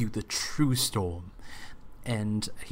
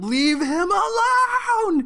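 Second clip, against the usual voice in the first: shrill, very high yell climbing in pitch, frustrated; 7 dB louder than usual. Player voicing their character, frustrated his frostbolt missed, frustrated shout with rising pitch. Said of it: "his voice getting higher and higher".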